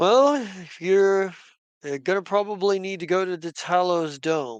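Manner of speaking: put-on talking with a chuckle underneath. Narrating a character's reply to the party: chuckling while talking. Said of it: "he kind of chuckles".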